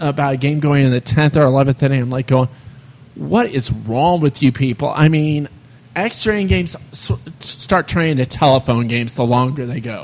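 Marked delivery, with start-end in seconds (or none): none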